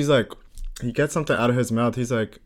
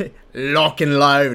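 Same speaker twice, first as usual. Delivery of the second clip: put-on Australian accent. Podcast co-hosts riffing on an Australian version of their intro, mock Steve Irwin Australian accent. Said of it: "I thought we were going to have an Australian version".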